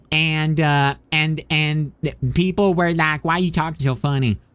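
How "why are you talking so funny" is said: plain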